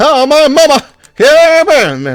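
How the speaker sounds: put-on country accent. Discussing a game's murder victim, imitate Byakuya's sudden country accent. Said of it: "his country accent suddenly came out".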